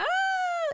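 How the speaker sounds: very high, loud, startled, awkward shriek. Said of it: "and I was like".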